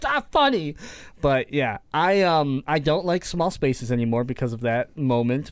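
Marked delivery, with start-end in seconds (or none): 0.0-0.8 shrill, very high, upset yelling. Recalling being let out, crying, while she laughed; retelling a yell at her. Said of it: "I'm like yelling at her".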